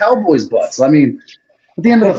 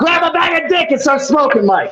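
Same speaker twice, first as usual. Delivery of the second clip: shouting, yelling, higher pitch; 8 semitones higher than usual. Cutting off another speaker mid-argument, yelling. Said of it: "Why are you yelling?".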